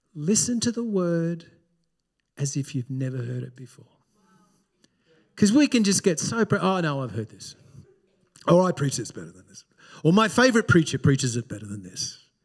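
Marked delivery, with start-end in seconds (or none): 0.2-3.9 small, soft, sweet little lady's voice. Quoting what his bible school lecturer used to say, imitating her sweet little voice. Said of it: "with this sweet little voice".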